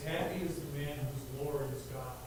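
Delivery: normal talking voice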